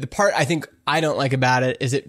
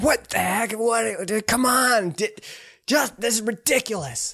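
mock old-man yelling, much higher pitched; 8 semitones higher than usual. Describing someone's funny voicemails, imitating an old man yelling into a phone. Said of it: "an old man like on his porch, but yelling into a phone".

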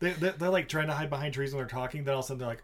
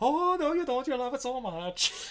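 bad put-on Scottish accent, very high pitched; 11 semitones higher than usual. Retelling an exchange between her and him, repeating her bad scottish accent. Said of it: "what kind of stupid accent she was trying to do".

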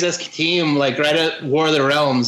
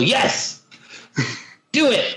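mock nervous half-yell, high, mild and light; 6 semitones higher than usual. Imitating an imagined Marvel editor who must yell on the phone: imitating someone yelling. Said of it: "he has to yell".

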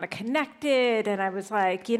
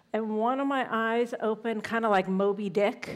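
ordinary delivery

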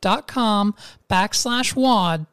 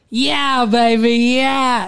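overdone, corny, hammy delivery trying way too hard; 4 semitones higher, 4 dB louder than usual. Trying the catchphrase after saying it can't be done: overdone Austin Powers impression. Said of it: "almost corny how hard you tried".

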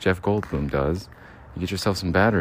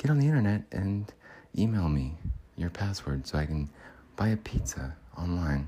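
put-on halting actor voice, quieter; 5 dB quieter than usual. Doing an impression, selling rechargeable batteries: Jeff Goldblum impression. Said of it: "Jeff Goldblum, everybody".

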